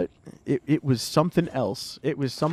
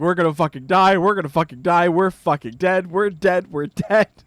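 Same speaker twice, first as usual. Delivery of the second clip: mock, full-blown, frantic panic with repeating words; 2 semitones higher, 4 dB louder than usual. Telling the listener how they reacted, imitating someone panicking. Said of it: "you immediately went into a panic".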